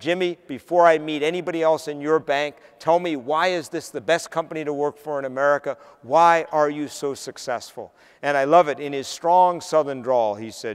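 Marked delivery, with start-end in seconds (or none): none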